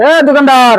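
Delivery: loud, high-pitched, demanding shouting. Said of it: "আমি একটু practically ভাবে দেখাই দেই".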